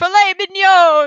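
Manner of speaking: squeaky, very high, loud French accent. Discussing a game scene, speaker quotes a character: French voice. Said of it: "the French voice sounds a lot like Mauser".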